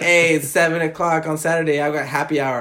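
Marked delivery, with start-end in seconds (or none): none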